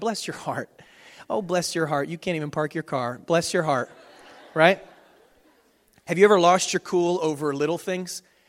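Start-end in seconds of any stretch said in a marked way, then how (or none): 0.0-3.9 put-on falsely sweet, mocking Southern accent, lower pitch. Imitating how people down south insult someone: falsely sweet southern put-down. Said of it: "makes it sound like I'm affirming you when I'm actually cutting you down".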